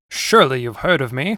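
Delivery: plain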